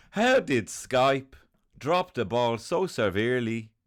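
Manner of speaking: lilting put-on Irish voice, Dublin twang. Like an interviewer grilling a famous tycoon while putting on a lilting Irish lilt, accusing him of fumbling a big product. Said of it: "I'm doing a Dublin twang".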